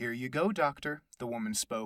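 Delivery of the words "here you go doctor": sugary-sweet voice, higher. Reading a story, voicing the woman handing the doctor a tablet, sweet sugary voice. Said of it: "with a sweet, sugary voice".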